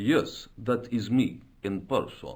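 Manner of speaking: put-on Eastern European accent. A Nobel Prize winner answers a stranger who recognizes him, Eastern European accent. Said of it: "That accent".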